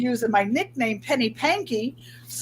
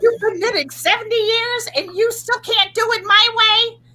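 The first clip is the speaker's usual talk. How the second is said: voice pitched very high; 10 semitones higher than usual. Speaker quotes what her mother said to her, in a high voice imitating her. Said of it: "She has a high voice".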